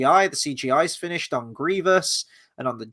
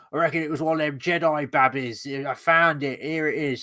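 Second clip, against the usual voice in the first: proper, full-on put-on Cockney accent. Retelling how a hooded figure in a book talks: imitating a proper Cockney accent. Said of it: "proper Cockney".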